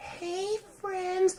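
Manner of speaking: very high, faint, soft half-whisper. Mocking a woman who always half-whispers: imitating someone half-whispering. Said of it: "Why are you whispering?".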